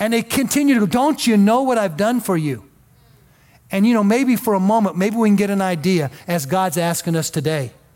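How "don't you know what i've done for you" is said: put-on sobbing, pleading tone, higher. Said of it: "he's just crying out".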